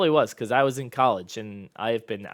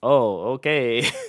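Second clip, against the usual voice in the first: acted-out sarcastic tone; 4 dB louder than usual. Speaker recalls their reaction to an article title, retelling a sarcastic reply. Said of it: "Like very sarcastic".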